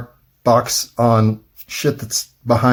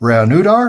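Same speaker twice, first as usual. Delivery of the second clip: unsure, tentative stress placement on reanudar; 7 semitones higher, 3 dB louder than usual. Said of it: "where you put the emphasis on that word".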